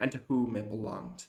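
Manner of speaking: ordinary delivery, nothing marked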